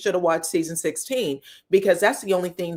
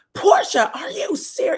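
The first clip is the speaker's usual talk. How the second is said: imitated screaming, higher pitch; 11 semitones higher than usual. Retelling a reality show argument: imitating someone screaming. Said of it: "she's screaming".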